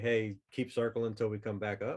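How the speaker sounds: normal talking voice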